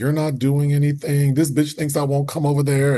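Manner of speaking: high, heated ranting. Retelling what the screaming lady said to coworkers: imitating a screaming worker. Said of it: "The same lady who was screaming".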